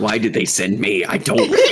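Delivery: muttered whisper under the breath. A game character mutters to himself in Undercommon, whispering under his breath. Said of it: "he's like whispering on his breath".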